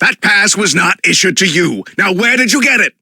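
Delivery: loud shouting, yelling. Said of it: "There's no need to shout".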